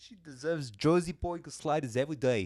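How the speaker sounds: high, thick, put-on Jersey accent.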